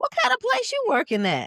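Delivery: put-on loud, high-pitched grandma voice. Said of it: "And that's what it sound like".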